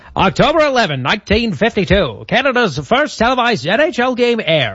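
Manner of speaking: put-on high-pitched, old-timey radio announcer voice.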